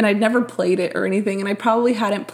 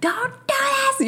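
very high, shrill screech, acted out. Speaker recalls struggling through game levels, retelling screaming at game characters. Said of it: "just screaming at these characters".

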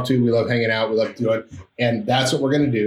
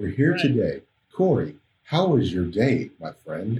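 dull, polite, boring radio presenter delivery; 3 semitones lower, 3 dB quieter than usual. Speaker mocking boring shows in their niche, greeting a co-host, boring NPR voice. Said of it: "like an NPR station".

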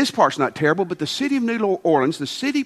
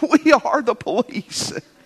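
high, broken, frightened voice; 5 semitones higher than usual. Retelling a story, Barney answers Gomer's plan to call the police, in a put-on broken, scared voice. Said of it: "in his broken, scared voice".

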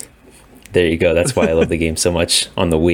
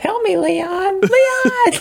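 mock voice, very high, slow and whiny, pleading. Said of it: "The only things she says are just like".

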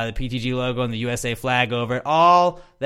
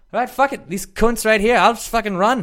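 bad put-on Irish accent, much higher; 10 semitones higher, 4 dB louder than usual. Retelling a man's jog right after he got out of jail, in a shitty Irish accent. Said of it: "That's my shitty Irish accent again".

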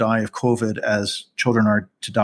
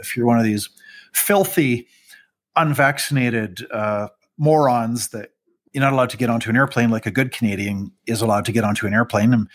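ordinary delivery

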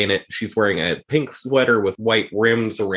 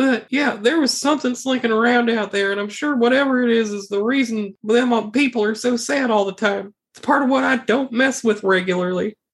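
very high, put-on voice of a dead woman; 13 semitones higher than usual. Playing a dead woman in a role-playing game, talking to the other players, dead woman voice. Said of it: "I'm just a dead woman".

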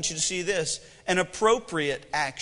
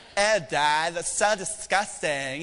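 put-on slow valley girl voice. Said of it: "When did you start talking like a valley girl".

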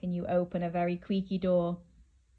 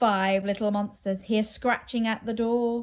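usual speaking voice

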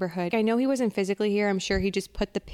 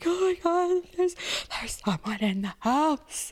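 put-on tearful, frantic, panicked whisper with crying; 8 semitones higher than usual. Retelling a frightened phone call to a friend in the dark, imitating own past crying. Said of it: "I'm crying and I'm like".

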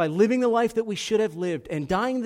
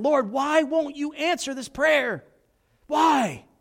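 put-on, high-pitched pleading holler, crying out; 7 semitones higher than usual. Retelling running up and down the aisle praying, re-enacting own hollering. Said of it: "just hollering".

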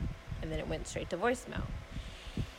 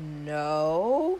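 suspect, shifty, evasive-sounding voice. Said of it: "Sounding hella, hella suspect".

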